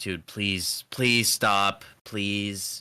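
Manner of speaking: mock earnest, heartfelt pleading, slow. Retelling how a gate guard begged to stop: imitating someone begging. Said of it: "he was genuinely begging me to stop".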